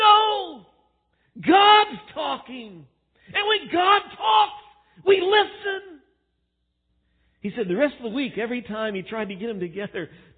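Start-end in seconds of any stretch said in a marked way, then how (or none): 0.0-6.0 exasperated outburst, very high and very slow. Retelling a man answering a timid child in a quiet room: mock-frustrated outburst. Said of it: "in just frustration".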